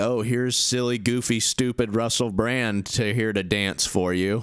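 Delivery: ordinary delivery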